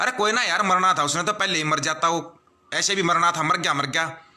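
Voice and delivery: ordinary delivery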